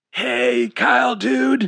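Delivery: high-pitched, raspy voice. Narrator reading Chad greeting a visitor beside his bed, raspy Chad voice. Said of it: "he said in a raspy voice".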